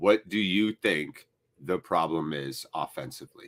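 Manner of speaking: earnest, dead-serious, low voice. Asking listeners a genuinely serious question: serious, earnest tone. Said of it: "Here's serious [name] voice".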